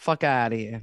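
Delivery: booming, very loud, sudden outburst. Asked if they want to hear it, the speaker launches into a Dana impression. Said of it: "you want to hear my Dana impression?".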